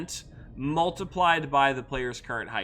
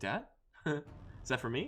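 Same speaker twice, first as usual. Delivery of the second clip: put-on cat voice, quieter. Joking about a pet's reaction, voicing what the pet would ask, imitating the cat. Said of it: "she's gonna hear me baby talking".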